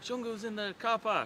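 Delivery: high-pitched, urgent yell.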